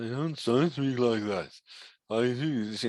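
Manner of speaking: unclear mumbling without using the lips. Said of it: "now I'm not using my lips".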